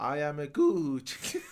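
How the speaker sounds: fake Italian accent, very slow, drawn way out. Showing off an accent mentioned in conversation: put-on Italian accent. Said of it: "I could have done that accent right now".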